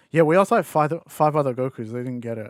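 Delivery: ordinary delivery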